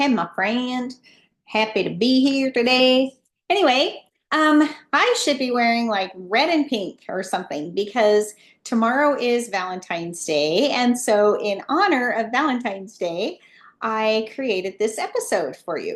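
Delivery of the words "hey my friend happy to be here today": put-on American Southern accent. Repeating the opening greeting on purpose: put-on southern accent. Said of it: "sounding like a Southerner".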